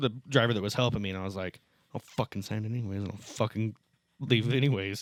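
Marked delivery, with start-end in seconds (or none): 1.9-5.0 muttered stage whisper. Retelling muttering a retort toward a customer: imitating his own stage whisper. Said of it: "that stage whisper".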